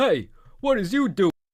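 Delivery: put-on very high-pitched, thick New Jersey cop accent. Recalling a cop who stopped them, mimicking him in a New Jersey accent. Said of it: "the most New Jersey accent of all time".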